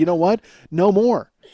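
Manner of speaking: ordinary talk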